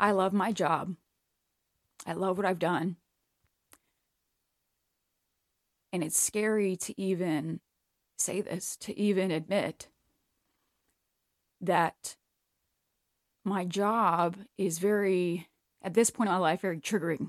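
tearful speech, crying while talking. Talking about loving their job as a hairdresser, crying while talking. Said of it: "I can't even say it without fucking crying".

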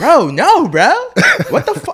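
very high, very loud dude voice, swooping. Retelling how the guy at a party answered: impersonating a guy at a party. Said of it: "that impersonation is fucking crazy".

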